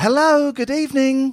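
shrill, very high, loud, put-on lady voice. Retelling a phone call by imitating the lady who answered: put-on lady voice. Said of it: "I'm a lady".

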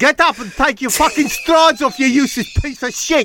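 put-on very high, harsh, abusive South African accent. Retelling what the man who hit him said, in a south african accent. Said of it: "He was South African".

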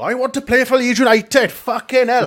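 put-on Scottish accent, very loud and shrill. Imagining him walking into an office and speaking, in a scottish accent. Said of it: "Why did he do a Scottish accent?".

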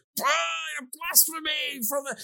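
mimicked people shouting. Retelling how the audience reacted, imitating people shouting. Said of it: "people shouting at him".

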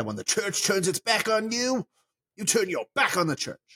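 clumsy, bad, high-pitched cartoon voice. Rewording a Disney quote as the other speaker asked, in a bad Timon impression. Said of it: "That was a terrible Timon impression".

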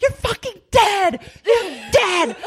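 shrill, very high-pitched, threatening scream. Retelling how someone banged on the door: imitating someone screaming threats. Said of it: "Jocelyn's, like, screaming".

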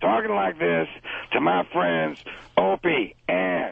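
raspy, rough-edged voice throughout. Asked to do it for the new listeners, a yelling Pacino impression. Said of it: "The yelling Pacino".

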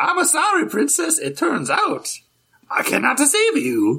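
very high, full-blown cartoon voice with swinging pitch. Picking up a joke about a grating voice, in full-blown Mario voice. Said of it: "full-blown Mario talking".

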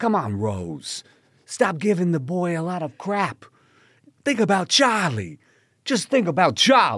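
put-on very loud, very high, spot-on New York accent. Retelling what the speaker said while watching a play, in a New York accent. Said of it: "probably spot on New York accent".

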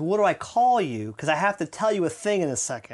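ordinary talk

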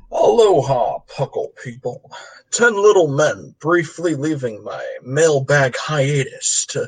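attempted western cowboy voice. Podcast host reading out a mailbag letter, attempted cowboy western voice. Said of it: "I'm going to do this one in a cowboy western voice".

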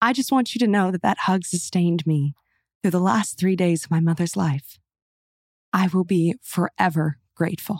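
emotional, choked-up, tearful reading, near tears. Reading a thank-you letter aloud to the other speaker, tearing up. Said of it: "I hear [name] tearing up".

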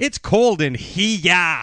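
put-on New England accent. Retelling actors told to do their New England accents: New England accent. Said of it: "so do your New England accents".

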